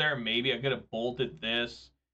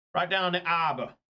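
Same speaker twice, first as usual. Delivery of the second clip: put-on Boston accent with dropped Rs; 5 semitones higher than usual. Recalling a rental car clerk, the speaker imitates his accent. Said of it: "had an accent like that".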